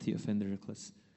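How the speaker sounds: ordinary talk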